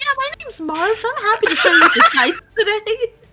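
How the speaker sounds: very high, very loud, sunny, chipper, overly friendly voice. An eagle turns around and introduces itself: happy Marv eagle voice. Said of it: "They're just so happy to be here".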